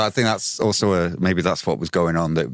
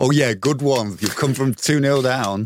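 slow, pitched-up mock sarcastic tone; 7 semitones higher than usual. Imitating a fan who applauds a goal: imitating sarcastic fan. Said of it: "sarcastically applaud that goal".

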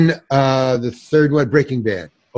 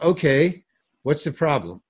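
put-on calm, much quieter; 6 dB quieter than usual. Retelling what a man said as the speaker approached, imitating someone very calm. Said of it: "Very, very calm".

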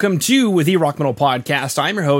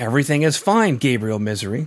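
passive-aggressive tone and delivery; 4 semitones lower, 3 dB quieter than usual. Joking about what parents will say when mad at their son, passive-aggressive tone. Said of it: "I said that in like a passive aggressive tone".

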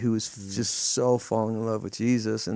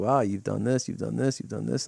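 fake sarcastic delivery. Acting out God addressing the church: imitating God speaking sarcastically. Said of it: "God's just kinda sarcastically saying".

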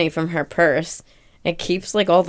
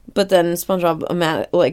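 ordinary talk

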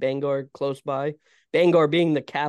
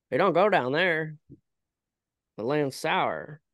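put-on full-blown, thick rural Maine accent. Trying, after practicing, to do a character's classic line as best you can, Pet Sematary classic quote impression. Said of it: "I'm going to try to do it".

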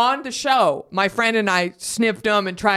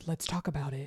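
soft, gentle, light voice; 5 semitones lower, 15 dB quieter than usual. Imitating a TikTok creator who talks about perfume: light voice like Charles Gross. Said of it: "he talks in a really light voice like this".

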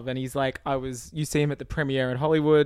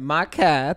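loud put-on character voice; 5 dB louder than usual. Performing a line after being asked for it: Borat voice. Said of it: "can you just say it Borat voice".

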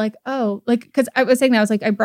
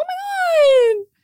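very high, gushing exclamation with "my" drawn out. Showing how imitating Kendall's accent sounds: imitating Kendall. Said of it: "impersonating Kendall".

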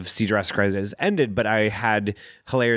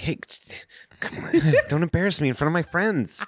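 fake drunk voice, higher pitch; 8 semitones higher than usual. Joking about a toy dinosaur as someone's drunk cousin: put-on drunk cousin voice. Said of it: "Stiggy's drunk cousin".

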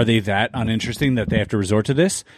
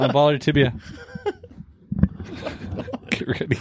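breathy words breaking into laughter; 4 semitones higher, 4 dB quieter than usual. Threatening to hit the other's tibia with a bottle, laughing while talking. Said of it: "I can't stop laughing 'cause you're laughing".

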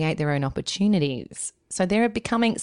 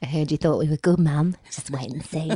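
put-on creepy doll voice. Imitating the children talking back to their mum: Chucky voice. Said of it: "they talk like Chucky".

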